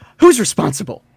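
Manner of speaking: put-on angry voice. Voicing a character who gets all mad, demanding answers: mad in-character demand. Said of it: "she gets all mad".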